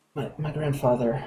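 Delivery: very quiet, hushed whisper under breath. Game master voicing a woman with memory loss who recognizes an approaching figure, very quiet whisper. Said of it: "very quietly whisper under her voice".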